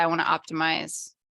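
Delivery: ordinary talk, nothing marked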